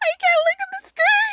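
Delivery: laughing so hard it turns tearful.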